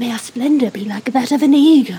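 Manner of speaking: whispered speech. Casting a spell on a companion while steadying oneself: whispering. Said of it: "I'm gonna whisper".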